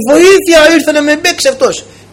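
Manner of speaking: crying out, high-pitched.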